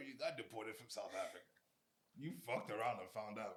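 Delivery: chuckling, amused teasing, laughing through the words. Asking another speaker about being deported, laughing while talking. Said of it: "I'm sorry for laughing".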